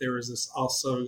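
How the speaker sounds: ordinary delivery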